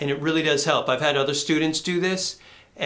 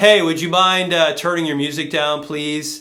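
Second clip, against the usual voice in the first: loud, open, ringing, buzzy, forward, resonant tone; 6 dB louder than usual. Role-playing asking someone at their door to turn music down: open, resonant, buzzy voice. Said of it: "my voice is very open? It's very resonant. It's very buzzy".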